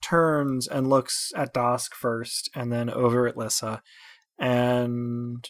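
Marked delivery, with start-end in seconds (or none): none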